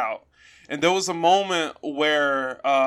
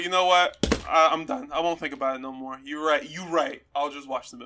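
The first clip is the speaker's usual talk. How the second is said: ordinary talk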